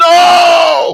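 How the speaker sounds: anguished shout, high-pitched and loud.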